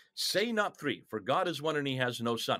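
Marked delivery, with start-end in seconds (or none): none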